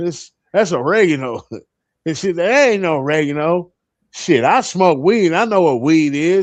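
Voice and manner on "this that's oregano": plain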